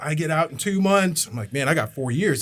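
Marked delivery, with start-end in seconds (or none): 0.0-1.3 mock screaming, much higher pitch and slower pace. Telling about a phone call after boot camp, retelling someone yelling. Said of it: "he's screaming, yelling at me".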